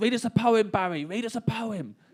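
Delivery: mock crowd shouting. Retelling a festival crowd demanding a poem from Barry: imitating a shouting crowd. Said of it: "and then they start shouting".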